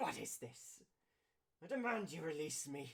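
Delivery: tense, scornful, high-pitched, sneering angry tone. Voicing a sneering villain who demands to be released: voicing a sneering angry character. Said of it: "tensed up shoulders and sneering".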